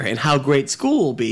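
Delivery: ordinary delivery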